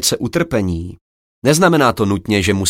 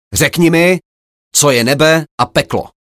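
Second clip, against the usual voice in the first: loud, impatient, disrespectful, pitched-up delivery; 5 semitones higher, 4 dB louder than usual. A samurai orders a meditating Zen master to answer, impatient, loud commanding voice. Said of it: "Netrpělivě a bez špetky úcty přikázal silným hlasem zvyklým poroučet".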